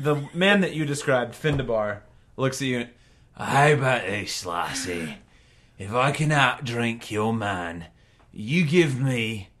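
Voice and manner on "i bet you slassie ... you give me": put-on grubby old dwarf voice. A game master voices an old dwarf addressing a player's character, in an old dwarf voice. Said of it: "He's like short for dwarf standards. ... You see a table of three old grody looking dwarves waving at you with Tabitha waving at you as you dance. ... Oi, lassie".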